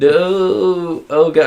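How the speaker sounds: upset, sobbing high woman's voice, drawn-out "no". Retelling a film scene where the wife is upset: imitating a crying woman. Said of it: "and then she's crying, she's really upset".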